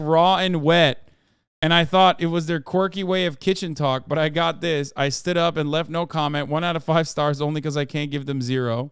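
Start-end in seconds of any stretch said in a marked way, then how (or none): none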